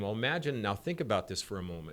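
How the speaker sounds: ordinary talk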